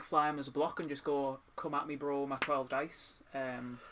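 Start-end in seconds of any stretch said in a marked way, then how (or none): none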